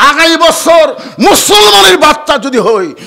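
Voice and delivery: shouting angrily, high and loud. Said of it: "আমার উপর রাগ করেন কেন?".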